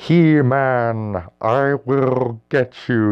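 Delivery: high, very slow, drawn-out underwater voice. Describing how characters spoke underwater in a show, doing a Merman voice. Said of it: "like it wasn't Merman".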